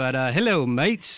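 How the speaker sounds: practiced put-on British accent. Joking about practicing being British at the office, put-on British accent. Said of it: "I'm British now, and I've been practicing".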